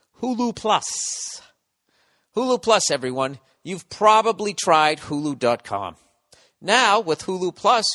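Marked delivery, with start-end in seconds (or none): 0.2-6.0 slow, over-enunciated, every consonant carefully placed. Reading a sponsor ad, slow and enunciated. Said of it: "try reading slower and enunciating".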